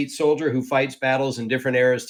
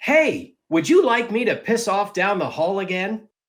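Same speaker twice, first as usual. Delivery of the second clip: voice pitched up into video-game character style; 7 semitones higher than usual. Asked by another performer to do the voice, delivering a line as Pathfinder voice. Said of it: "do your do your voice, Path".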